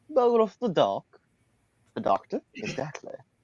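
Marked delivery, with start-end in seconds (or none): 0.2-1.1 put-on British accent, higher and louder. Saying a name after being told it sounds menacing: british accent. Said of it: "If you say it in a British accent".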